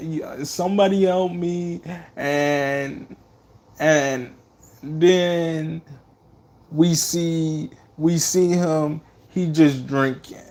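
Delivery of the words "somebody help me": high, tearful, sobbing, pleading voice. Retelling a movie scene after a son is shot: imitating Michael crying. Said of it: "He was just crying like".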